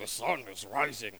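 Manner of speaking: low, deep dwarf voice.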